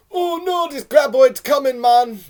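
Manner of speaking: put-on Jamaican accent. Riffing on a graboid movie scene, in a Jamaican accent. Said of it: "That was a Jamaican accent".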